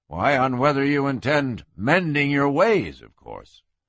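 plain

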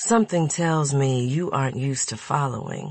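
ordinary delivery, nothing marked

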